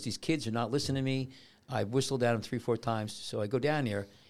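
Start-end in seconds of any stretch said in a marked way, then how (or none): none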